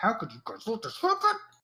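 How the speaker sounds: very high, very loud, enraged, raging shriek. Narrator voices an upset guy raging at visitors in his yard, screaming and yelling. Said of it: "He just starts screaming and yelling".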